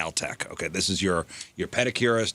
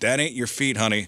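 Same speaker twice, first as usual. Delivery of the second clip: put-on teasing tone, higher pitched; 4 semitones higher than usual. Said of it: "And then he's like".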